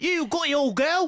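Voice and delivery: put-on near-Cockney London accent. Imagining how a man in the crowd sounded; almost Cockney accent. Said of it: "almost like Cockney".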